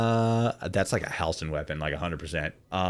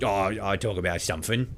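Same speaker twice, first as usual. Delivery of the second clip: put-on casual, careless, lackadaisical manner. Imitating how a goblin character talks: imitating a casual, careless manner. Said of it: "brutalistically tr-, uh, casual manner".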